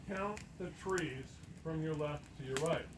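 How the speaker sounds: ordinary talk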